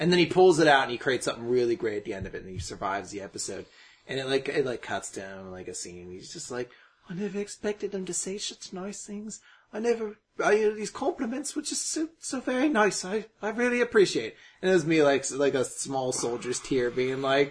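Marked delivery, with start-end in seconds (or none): 7.1-14.4 high-pitched storybook bear voice. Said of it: "he almost sounds like a Winnie the Pooh brought to life".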